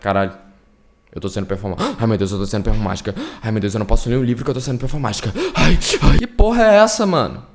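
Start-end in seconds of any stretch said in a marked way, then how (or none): 0.0-6.2 put-on anguished, distressed, spiraling fretting lament. Imitating a person not well in the head: imitating a person not well in the head. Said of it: "se essa pessoa não é tão bem de cabeça assim, ela vai".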